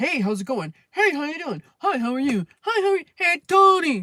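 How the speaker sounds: high, loud, chatty, friendly dog voice. Complaining about dog owners, the speaker acts out the dogs meeting, voicing a dog's greeting. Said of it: "what do you think they're gonna do?".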